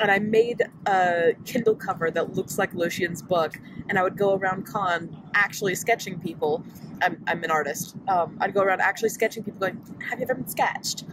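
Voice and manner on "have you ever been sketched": mocking, very sassy little voice. At a con in costume, going around sketching people: retelling sassiest little voice. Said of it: "in the sassiest little voice".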